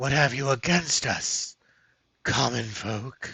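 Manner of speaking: slow, rasping male voice overlaid with echoes. Narrating an armored figure addressing you from the crowd, raspy echoing male voice. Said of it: "addresses you in a raspy male voice, overlaid with echoes".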